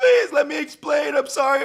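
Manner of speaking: mock crying plea, very high, loud, tearful. Retelling a breakup video where the man stayed calm, imitating the woman's crying plea. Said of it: "She was crying".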